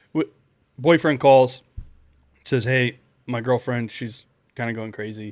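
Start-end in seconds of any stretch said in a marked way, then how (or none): none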